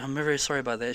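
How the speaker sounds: put-on overly polite voice. Retelling a comedy sketch's restaurant scene: imitating an over-polite apology. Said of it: "says something really over polite".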